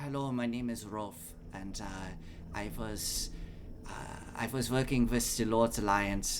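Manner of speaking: put-on German accent, laid on thick. Imitating Rolf's voice when asked, Rolf's German accent. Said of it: "had like a German accent. It was like".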